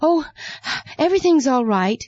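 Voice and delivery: out of breath. After running to catch the chariot, a servant answers, breathless. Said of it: "Gehazi answered breathlessly".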